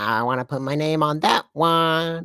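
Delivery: really annoying put-on voice, high and drawn out. Speaker mimicking a woman whose voice they dislike: imitating her really annoying voice. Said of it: "she says it in this really annoying voice".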